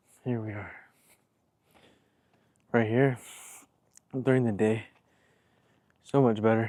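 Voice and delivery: out of breath, catching his breath. A package mover, having just walked all the way up, speaks out of breath. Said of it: "Sorry, I gotta catch my breath".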